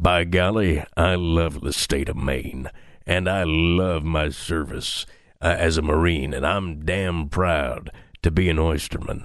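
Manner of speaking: deep, rugged tough-guy voice. Imitating a candidate from his campaign ads, in a deep, rugged voice. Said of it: "because of this guy's deep, rugged voice".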